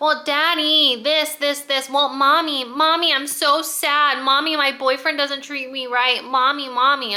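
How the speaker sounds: put-on whiny, childish little-kid voice. Mocking grown characters from a book who act childish: imitating childish whining. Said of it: "they literally still called their parents mommy and daddy".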